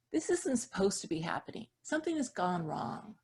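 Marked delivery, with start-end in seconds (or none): none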